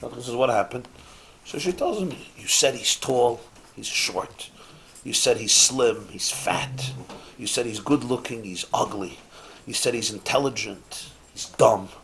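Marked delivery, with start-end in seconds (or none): 2.4-11.9 breathy half-whisper, kept low. Telling a joke, acting out a woman half-whispering to the Shadchan, imitating a half-whisper. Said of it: "So she whispers to the Shadchan".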